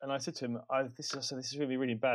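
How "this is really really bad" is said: ordinary talk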